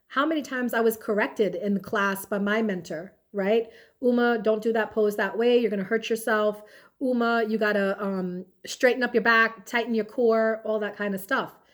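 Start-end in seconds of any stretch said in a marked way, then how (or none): none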